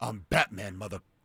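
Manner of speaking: put-on gruff hero voice. Quoting the movie line: Batman voice. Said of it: "he goes".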